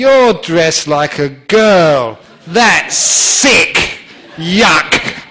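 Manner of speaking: mock, very loud, very slow utter disgust. Retelling what a thirteen-year-old girl said to him: imitating a disgusted girl. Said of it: "looked me up and down with utter disgust".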